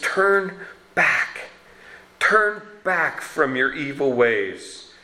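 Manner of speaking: put-on begging voice full of pleading, imploring. Quoting God's words to listeners, the speaker acts out a pleading plea. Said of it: "you can hear the pleading in his voice".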